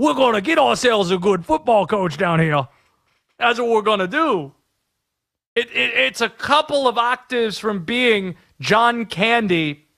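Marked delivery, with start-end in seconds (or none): 0.0-4.5 put-on Louisiana southern politician accent. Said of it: "Go find the clips of him talking".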